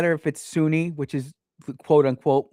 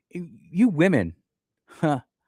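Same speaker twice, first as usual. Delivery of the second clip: scornful, derisive, disdainful mocking tone. Addressing women who take up Sharia law, mocking and disdainful. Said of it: "a little bit of mockery and disdain in my voice".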